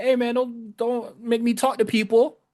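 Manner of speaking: hollered yell. Retelling what a man yelled at someone, retelling a yell. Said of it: "he yelling at Robert Stone, be like".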